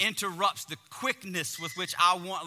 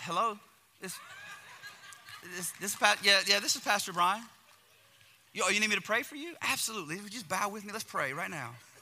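mock-sweet politeness, higher and slower; 3 semitones higher than usual. Retelling answering the phone mid-argument: acting out sudden sweet politeness. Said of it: "it's Dr. Jekyll and Mr. Hyde".

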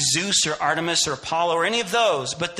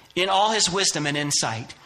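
normal talking voice

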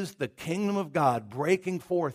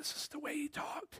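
put-on voiceless man voice, higher and quieter; 12 semitones higher, 14 dB quieter than usual. Imitating a pastor teaching on a tape: imitating a man who lost his voice. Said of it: "he was talking like this".

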